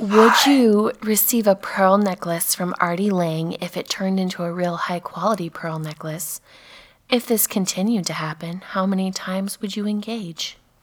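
whispering. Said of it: "Whisper it".

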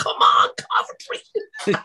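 mock, mild cheering tone. Recalling watching a match, re-enacting shouting at the screen. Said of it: "I was like".

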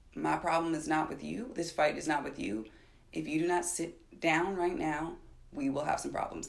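very quiet, barely-above-a-hush voice. Retelling what was said to a woman who got in their face, retelling speaking quietly. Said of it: "I said so quietly".

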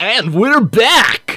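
on-air radio host voice. Host bringing the Kingdom Pen Radio show back on air, in a special radio voice. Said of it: "my special radio voice".

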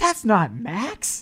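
mock, very loud, very high blurted outburst. Recalling seeing a movie trailer with family and reacting; retelling a very loud outburst. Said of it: "and I say very loudly".

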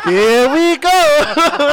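very high, loud video-game voice, pitched way up, called out. Echoing a catchphrase after saying someone sounds like Mario: Mario voice. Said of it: "you sound like Mario".

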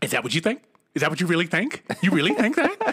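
fast, rapid-fire, repeated delivery. Retelling his partner questioning him after his remark: imitating rapid-fire questioning. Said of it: "she kept asking me so fast".

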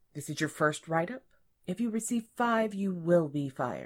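ordinary delivery, nothing marked

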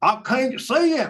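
put-on thick Southern accent, very high-pitched. Quoting a lady from tennessee in the crowd looking for the bear, heavy southern accent. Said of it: "with a heavy Southern accent was saying".

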